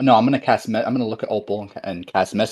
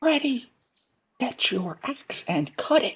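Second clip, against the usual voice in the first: slow, hushed, high half-whisper; 5 dB quieter than usual. Half-whispering back to a party member during a tense scene: half-whisper. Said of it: "I'm gonna whisper back".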